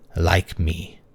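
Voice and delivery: slow hoarse whisper, each consonant clearly enunciated. Reading a story where a man speaks by the narrator's ear, slow whisper, each consonant clear. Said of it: "very slowly, each consonant clear, like a whisper".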